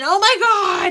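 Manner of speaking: very high, loud, shrieking scream. Retelling how Owen came back from the kitchen, imitating Owen screaming. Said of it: "he comes back and he's screaming".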